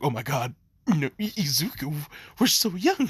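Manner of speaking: flustered, panicky stammer, tripping over words. Acting out a mother reacting to a couple in public: acted panic. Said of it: "her mind is panicking".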